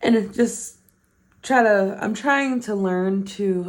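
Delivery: words pushed out mid-yawn. Speaker addressing viewers about getting more active, yawning while talking. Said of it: "I'm sorry, I'm yawning".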